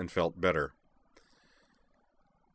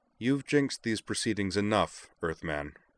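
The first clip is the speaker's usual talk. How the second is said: ordinary delivery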